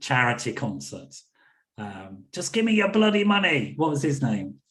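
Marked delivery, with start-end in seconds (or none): 2.3-3.7 put-on Irish accent, higher pitch. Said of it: "that's my impression of".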